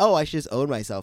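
plain

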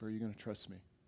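faint, very quiet little half-whisper. Retelling a voice heard while driving: retelling a quiet half-whisper. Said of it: "Just a little quiet whisper".

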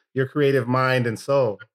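plain

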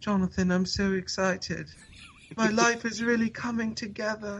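put-on very high, soft, smug British accent. Quoting a tweet from a British guy, imitating Kaz's British accent. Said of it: "every time you speak in a British accent".

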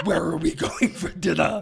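fake growling voice.

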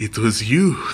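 put-on Japanese-accented speech. Describing the game's ending, imitating James with a Japanese accent. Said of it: "he says it in a Japanese accent".

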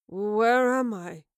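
slurring words. [name], just awakening, answers Astrid: slurred. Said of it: "he slurred".

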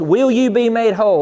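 stern, firm, commanding voice of authority. Recounting hearing the Lord speak to them, retelling God's stern voice. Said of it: "a stern, firm. Authoritative voice".

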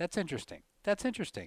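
high, repeated mocking delivery.

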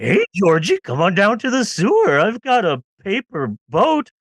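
enticing, creepy clown voice. Joking about the sewer clown luring kids, Pennywise voice. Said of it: "Pennywise is like attacking people".

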